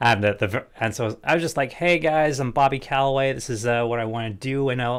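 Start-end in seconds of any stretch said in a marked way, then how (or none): 1.7-4.7 put-on American accent. Retelling an intro video recorded as a troll: put-on American accent. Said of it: "record it in an American accent".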